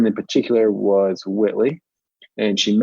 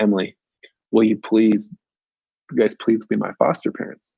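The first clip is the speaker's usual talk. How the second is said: put-on tearful, pleading, begging voice. Retelling a phone call from a seventeen-year-old: imitating Whitley crying and begging. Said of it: "Whitley crying, begging".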